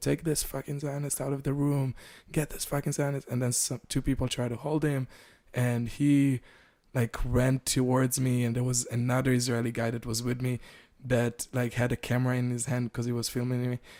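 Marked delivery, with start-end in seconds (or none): 0.0-3.3 play-acted, heated screaming outburst, kept mild. Retelling how someone in the room got up: imitating someone screaming. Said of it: "someone got up and started screaming".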